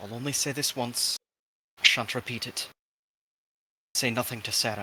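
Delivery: very quiet, hushed, confidential murmur. Voicing a character pulling another aside: speaking very quietly. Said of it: "just very quietly".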